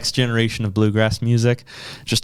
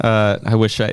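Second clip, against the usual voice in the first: ordinary delivery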